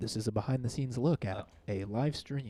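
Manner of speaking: golf announcer, commentator-style voice. Showing a behind-the-scenes look at a live stream: golf announcer voice. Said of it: "I did that like a golf announcer".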